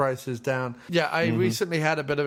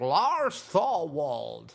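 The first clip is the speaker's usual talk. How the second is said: put-on swooping voice of an old film star. Quoting a line from Rear Window: Jimmy Stewart impression. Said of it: "where he's like".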